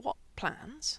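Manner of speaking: cautious, wary tone. A man puts a question to another man; asked carefully. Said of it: "he asked carefully".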